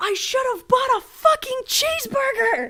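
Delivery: shrill, very high, loud shouted outburst. Telling a story, re-enacting stopping dead and retelling a yell. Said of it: "stopped dead in my tracks and yelled".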